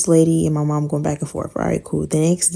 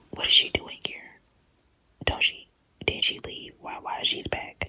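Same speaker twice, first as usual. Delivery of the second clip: put-on whisper, much quieter. Retelling what the stepdad asked you at your bedroom door: retelling a whisper. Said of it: "he's whispering to me".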